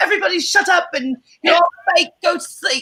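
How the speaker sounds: put-on British accent, very high pitched. Retelling what Sally said to everyone going to bed: imitating Sally's British accent. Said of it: "Sally was doing a British accent".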